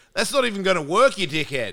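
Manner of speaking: put-on broad, very strong Australian accent, loud, high. Retelling telling someone a bong won't light without tobacco: thick Australian accent. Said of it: "you revert into your super accent".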